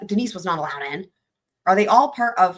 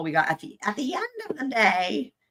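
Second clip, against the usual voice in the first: put-on crone-like old witch voice; 4 semitones higher, 4 dB quieter than usual. Recounting appearances for the state, speaker imitates Denise in an old witch voice. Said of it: "like a old witch kind of voice".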